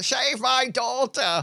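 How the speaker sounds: very high, shrill, piercing shriek. Voicing a mother who grabs a hero by the lapels: shrill screaming. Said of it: "a shrill screaming".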